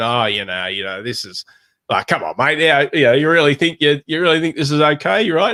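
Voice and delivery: play-acted, sing-song, buddy-buddy needling, matesy sarcasm. Acting out an aussie response to an idea: imitating matesy sarcasm. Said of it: "coding their tone in a very kind of matesy".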